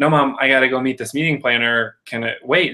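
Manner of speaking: ordinary talk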